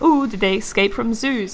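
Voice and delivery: normal talking voice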